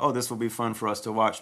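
usual speaking voice

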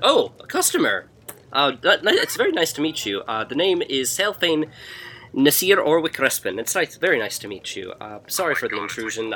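loud, startled, surprised gnome voice. Voicing a gnome surprised to see a customer: surprised gnome character voice. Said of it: "he looks at you with, like, surprise in his face".

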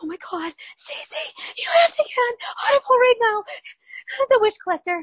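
very high, screamed whisper. Retelling an excited phone call from work: imitating own past whisper scream. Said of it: "I really was whisper screaming at work".

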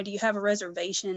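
ordinary talk, nothing marked

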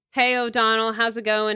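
ordinary talk, nothing marked

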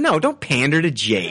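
ordinary delivery

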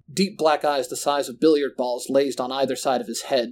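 ordinary delivery

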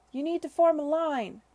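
very loud, high-pitched shout. A woman calls to the men over the din, shouting over the din. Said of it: "she shouted over the din".

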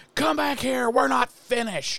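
mock very high, aggressive screaming yell. Retelling a scene where a young man screams at a woman: imitating someone screaming. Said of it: "because he's screaming at her".

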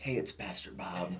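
mock toned-down voice. Retelling recording an early morning video while others sleep: imitating own toned-down voice. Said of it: "so I would tone it down".

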